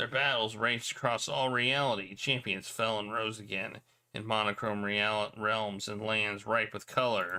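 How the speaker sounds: ordinary delivery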